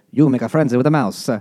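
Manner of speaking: loose, high-pitched, put-on Italian accent. Retelling a story where a mouse speaks to the rabbits, mock Italian accent. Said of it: "Because they sound Italian".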